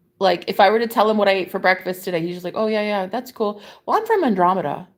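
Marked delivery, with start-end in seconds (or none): 2.6-4.8 offhand, casual, nonchalant, no-big-deal delivery. Retelling how a man answered when meeting them, mock-nonchalant. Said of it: "he just says it so nonchalant".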